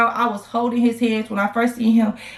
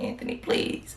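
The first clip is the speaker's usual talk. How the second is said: mock tearful crying plea, quieter. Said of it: "at this point, I'm crying".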